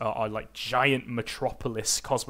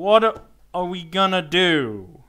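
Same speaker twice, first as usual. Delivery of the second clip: put-on very loud, high drunk voice, "do" stretched; 7 semitones higher, 8 dB louder than usual. Voicing a drunk woman leaning over the bar toward the group, in a drunk voice. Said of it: "trying to do a Calvin in drunk voice".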